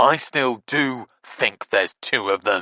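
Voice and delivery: very snooty, snotty tone. Narrator reads Eric contradicting the speaker, in his most snotty voice. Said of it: "said Eric in his most snotty voice".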